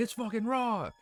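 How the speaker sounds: mock, full-on, high-pitched screaming outburst. Joking about how a chef would react instead, Gordon Ramsay screaming. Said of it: "instead of him screaming".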